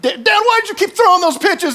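very high, exasperated, frustrated shout. Father retelling his son's morning complaints about his pitching; retelling a yell. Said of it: "he's yelling at me".

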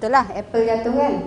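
ordinary talk, nothing marked

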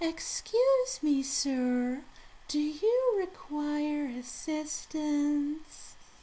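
ridiculously drawn-out, very slow, very high voice. Describing a character from the first Samurai Warriors, imitating a very slow, high voice. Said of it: "a very ridiculous voice that was very slow and very high".

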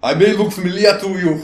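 very loud, high, hard tough-guy voice. Joking about playing as a time-travelling older brother: Butch Schaefer voice. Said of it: "You'll play as Butch Schaefer, Dutch's older, harder brother".

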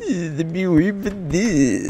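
mocking put-on voice. Repeating the other person's words back at them, mocking imitation of someone. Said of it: "Don't mock me".

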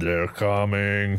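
dead-level, expressionless, flat monotone voice. Teasing another player about their character's voice, imitating it in a monotone voice. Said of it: "your character's voice was just so monotone".

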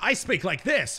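bright, loud speaking voice. Showing how they talk to other people, the speaker demonstrates an upbeat loud voice. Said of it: "speaking upbeat and loud".

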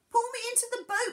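crying out, pitched very high. Tresco, clinging to the stern, calls to those in the boat, crying out. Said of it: "he cried".

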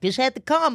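high-pitched, breezy, mock talking to oneself.

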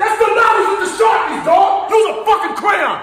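angry yelling rant.

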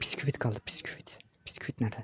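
unvoiced whisper under the breath.

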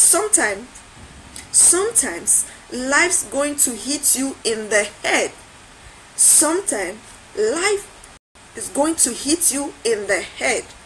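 ordinary talk

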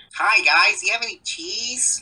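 very high, squeaky, clumsy stock nerd voice. Describing old nerd stereotypes, doing a bad Steve Urkel impression. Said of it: "the stereotypical Steve Urkel looking".

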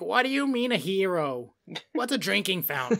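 put-on soft, grumbling, cranky old-lady voice, "hero" stretched out. Speaker acts out locals questioning his New York words, imitating an angry old lady. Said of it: "just angry old lady came out".

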